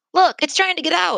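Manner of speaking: put-on boy's voice calling out, very high-pitched. Watching a giraffe tug at a locked door, a boy cries out. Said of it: "cried a boy".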